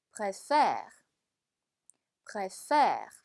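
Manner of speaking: préfère with heavy stress on the last syllable.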